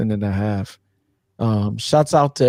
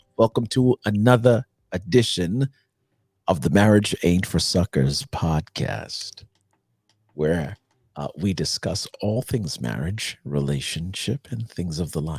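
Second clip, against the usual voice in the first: deep, on-air radio announcer voice; 4 semitones lower than usual. Podcast host welcoming listeners to another episode, in a radio voice. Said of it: "I'm on my radio voice".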